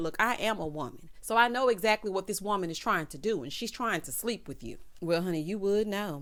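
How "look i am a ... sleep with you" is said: ordinary delivery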